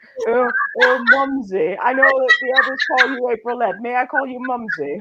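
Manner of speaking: silly, high-pitched put-on poodle voice. Voicing the poodle Gucci asking to call someone Mumsy: put-on Gucci voice. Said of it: "That's probably Gucci's voice because he is a poodle".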